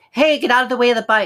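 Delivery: put-on old nasal shouting voice. Showing the old way of calling to a kid: old nasal shouting voice. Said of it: "the nasality I used to do".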